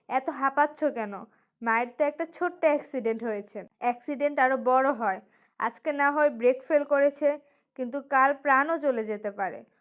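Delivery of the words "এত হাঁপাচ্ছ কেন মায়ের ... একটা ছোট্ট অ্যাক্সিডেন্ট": usual speaking voice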